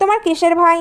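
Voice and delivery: ordinary talk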